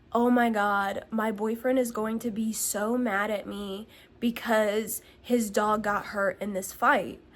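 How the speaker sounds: usual speaking voice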